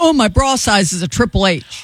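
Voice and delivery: ordinary talk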